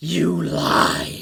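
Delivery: loud, raw, grating, rasping shriek. Voicing a ghostly woman in a hallway: loud shriek. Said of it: "loud shriek of".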